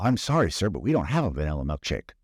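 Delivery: ordinary delivery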